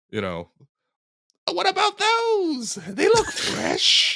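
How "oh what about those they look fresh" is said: very high, slow, stretched-out monster voice. Doing voices over a muted Lord of the Rings scene: Lord of the Rings orc voice. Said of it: "that's the orcs who were trying to eat Merry and Pippin".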